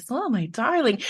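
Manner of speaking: syrupy, sweet, even-keeled parental tone. Describing how peaceful parents supposedly talk: sweet parent voice. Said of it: "they have this sweet voice".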